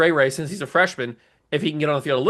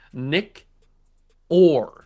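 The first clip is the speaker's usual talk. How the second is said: very slow, drawn-out, deliberate delivery. Announcing the team's punter, saying the name very slowly so it doesn't jumble. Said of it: "Got to say that very slowly".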